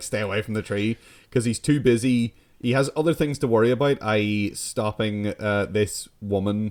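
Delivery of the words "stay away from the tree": plain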